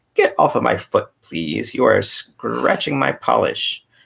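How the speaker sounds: harsh, machine-like voice. A narrator reads a voice suddenly speaking in the Scarecrow's ear, in a harsh metallic Tik-Tok voice. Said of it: "a harsh metallic voice".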